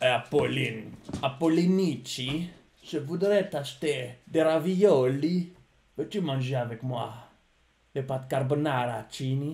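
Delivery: slow, drawn-out gangster-film mafia voice. Answering a request to do the mafia voice: mafia voice. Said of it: "Fais la voix de la mafia".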